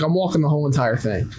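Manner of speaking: imitated Southern accent. Retelling what a hiker from Georgia said: imitating a southern accent. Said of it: "He had, like, a southern accent".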